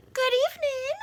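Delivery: very high, smooth, silky monster voice. Narrator voices the monster Ralph's greeting, in a high, silky voice. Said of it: "he said in a high, silky voice".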